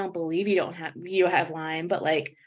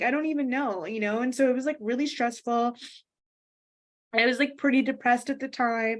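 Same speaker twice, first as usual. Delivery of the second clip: speaking through tears, voice pitched up; 5 semitones higher than usual. Speaker tells an interviewer about a stressful time, crying, tearful voice. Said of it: "I'm sorry to cry".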